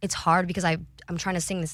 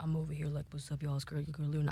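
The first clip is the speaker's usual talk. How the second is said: fake, exaggerated deep low voice; 3 semitones lower, 12 dB quieter than usual. Showing how low the voice sounds now: exaggerated low voice. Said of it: "I know my voice isn't that low".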